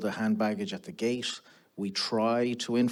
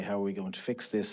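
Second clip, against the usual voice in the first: plain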